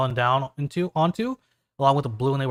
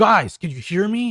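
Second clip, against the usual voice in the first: staticky, crackly, pitched-up voice like bad radio; 5 semitones higher than usual. A game master voices Doctor O calling the heroes over their morphers: crackly radio voice of Doctor O. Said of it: "And it's like crackly and staticky".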